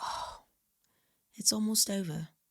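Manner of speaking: put-on Mancunian-accented voice. Quoting a girl from manchester at the convention as it closed, manchester accent. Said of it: "That's my accent".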